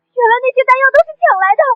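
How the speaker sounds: frightened crying. Reacting to the self-styled king's confession, crying in fright. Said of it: "怎么还吓哭了？".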